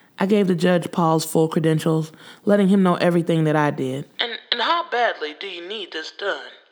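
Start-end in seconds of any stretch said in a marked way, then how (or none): 4.2-6.5 put-on gruff, curt, raspy old voice, kept quiet. A judge questions a man asking him for a favor, raspy old voice. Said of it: "Judge McCaskill? / That was the judge's style. He didn't do shit nicely. He was a bear to deal with, / Well, sir, / His voice was raspy and old, / Judge McCaskill? / His voice was raspy and old, / He".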